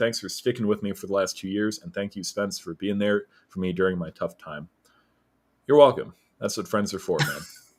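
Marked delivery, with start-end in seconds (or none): 5.7-7.4 perfunctory, going-through-the-motions, hollow and insincere. Replying to a friend who thanks [name] for being there, flat insincere monotone. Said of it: "sound completely insincere? / the yes, you have the most monotone".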